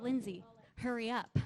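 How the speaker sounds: ordinary talk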